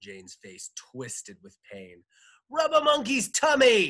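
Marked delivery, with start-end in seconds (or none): 2.5-3.9 very high, very loud, shrill swooping shout. Narrating Jane, hurt on the ground near her former teacher, shouting. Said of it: "she shouted".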